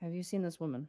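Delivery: understated, low-key, plain-spoken, matter-of-fact tone. Narrating a scene, the speaker voices a man unrolling a scroll, in a quiet voice. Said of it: "in this very kind of quiet voice goes".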